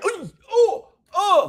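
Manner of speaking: acted, very high, loud, swooping sing-song cheer. Retelling how he reacts when a World Cup goal is missed: imitating his own World Cup cheer. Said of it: "But this, I'm like".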